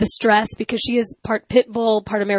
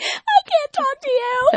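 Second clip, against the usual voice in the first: mock hysterical sobbing outburst, much higher-pitched. Recounting hanging up the phone while at work, retelling hysterical crying. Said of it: "I'm hysterically crying".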